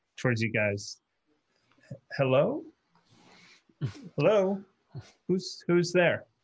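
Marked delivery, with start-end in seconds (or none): 2.2-6.2 puzzled, unsure, halting voice, calling out. Voicing a robed gentleman approaching the group: confused. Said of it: "confusedly looking over and walking over".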